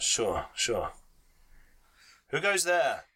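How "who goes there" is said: hard, steely, high-pitched calling voice. Voicing a guard challenging approaching travelers at night: steely voice. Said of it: "says a, a, a steely voice".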